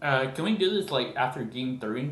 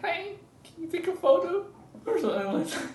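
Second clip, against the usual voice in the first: put-on squeaky, very high little-kid voice. Shy speaker retells asking a stranger for a photo, in own weird little kid voice. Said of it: "like little kid voice".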